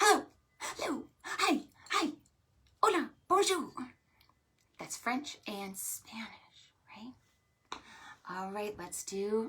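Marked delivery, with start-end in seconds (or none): 0.0-3.7 rattled off very fast, pitched up. Leading an opposites call-and-response game: saying hello as fast as possible. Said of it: "Let's say hello as fast as we can".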